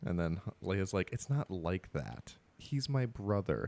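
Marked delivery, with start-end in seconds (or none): 1.1-3.7 play-acted, slow, patronizing, condescending, talking down. Retelling a movie scene where Leia answers Han: imitating condescending Leia. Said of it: "she just says it so condescending".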